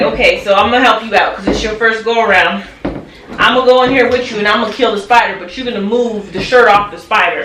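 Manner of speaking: ordinary talk, nothing marked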